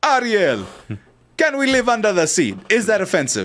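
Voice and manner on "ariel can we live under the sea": full, committed Jamaican accent, pitched up. After asking whether they can do it, speaking in a jamaican accent. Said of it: "at least you did a good Jamaican accent".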